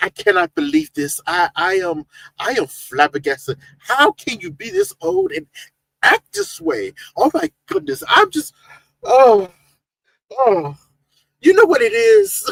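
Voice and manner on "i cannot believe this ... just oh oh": animated, high, swooping sing-song, slow and drawn out. Retelling a chat member's shocked reaction: impression of Samantha's voice. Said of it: "She's so like, she's like".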